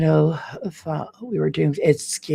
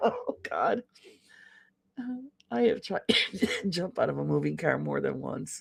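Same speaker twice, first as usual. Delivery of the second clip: laughing and coughing while talking, choking, quieter; 11 dB quieter than usual. Telling a story while choking with laughter: laughing and coughing while talking. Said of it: "I'm choking to death here 'cause I'm laughing".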